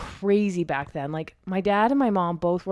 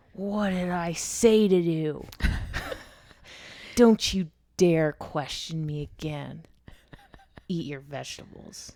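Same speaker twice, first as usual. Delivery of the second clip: slow, stern mock scolding tone. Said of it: "I said".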